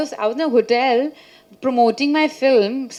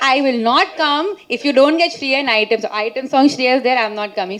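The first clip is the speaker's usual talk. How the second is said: normal talking voice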